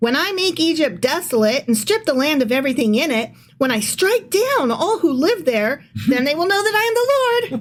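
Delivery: sweet, bouncy, cheerful, high sing-song reading voice. Reading a dark passage about Egypt aloud: Candyland voice. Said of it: "sometimes you have to read dark things in a Candyland voice".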